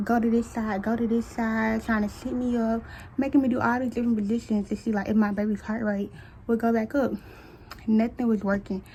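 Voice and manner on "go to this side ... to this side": ordinary talk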